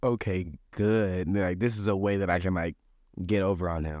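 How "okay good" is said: mock sarcastic tone. Retelling how the head chef reacted: imitating a sarcastic reply. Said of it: "I knew he was kinda sarcastic".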